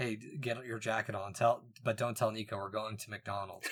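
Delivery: secretive, hushed half-whisper, still slightly audible. Retelling overhearing dad talk to a brother: imitating a half-whisper.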